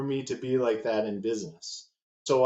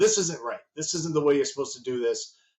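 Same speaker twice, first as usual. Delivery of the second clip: strict, very stern, fast delivery; 3 semitones higher than usual. Recalling how he corrected you when things weren't done right, imitating his very stern voice. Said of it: "that very stern voice would come out".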